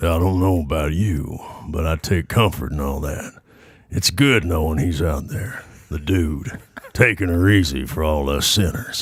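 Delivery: low voice with a slight southern drawl. Asked to try a Big Lebowski line, doing a Sam Elliott impression. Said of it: "Try a little Sam Elliott".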